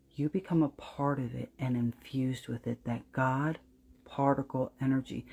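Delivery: dropped voice. A speaker addressing the audience directly, in a lowered voice. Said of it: "You notice how I lower my voice".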